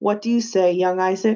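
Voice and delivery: ordinary delivery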